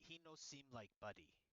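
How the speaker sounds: whispering very quietly. Voicing a character who pulls Spark aside: whispering very quietly. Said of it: "whisper to him very quietly".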